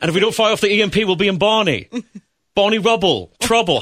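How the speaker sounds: terrible Cockney, high. Opening the show with a terrible Cockney impression of Don Cheadle: bad Don Cheadle Cockney impression. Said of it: "my terrible Don Cheadle from Ocean's Eleven impression where he was doing all that Cockney accent".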